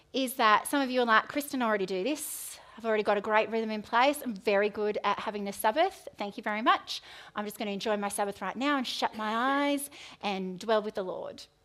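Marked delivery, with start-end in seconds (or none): none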